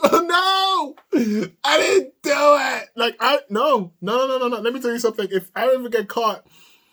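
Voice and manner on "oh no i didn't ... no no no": very slow, high, drawn-out, tearful pleading tone. Acting out their future self getting caught, imitating crying while pleading. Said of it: "I am in tears".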